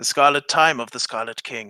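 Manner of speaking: put-on hushed, fanatical, zealous voice. Retelling what a man told the speaker, imitating a hushed fanatical tone. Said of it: "this hushed, um, fanatical kind of um tone of voice".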